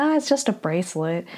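ordinary delivery

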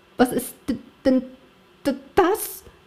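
stammering. Narrator reads a man seeing his farm in smoke, stammering. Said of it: "stotterte er".

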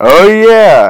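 very loud, high-pitched yelled exclamation. Reacting to hearing about a game-winning shot: yelling. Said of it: "no need to yell".

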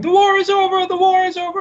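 acted, very high, shrieking screaming cry. Recalling the end of a movie, imitating the orphan screaming. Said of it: "like the orphan who's just screaming".

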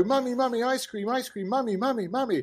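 put-on high-pitched child voice, pleading again and again. Imitating kids who hear the ice cream music: imitating kids begging for ice cream. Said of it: "designed to get the kids to go".

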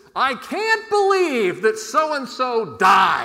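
very loud, booming, full carrying voice. Quoting their 8-year-old nephew in the opening-weekend crowd, in a full voice. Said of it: "in a full voice says".

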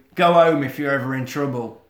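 plain

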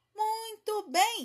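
very high, ringing exclamation. Narrator reads a character's reply to the bandits, exclaiming. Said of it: "exclamou Peter".

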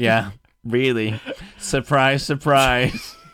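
very loud, high, sneering, judgmental put-on sarcasm. Imitating the other person's reaction to you: mock-sarcastic, judgmental. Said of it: "judgmental, sarcastic".

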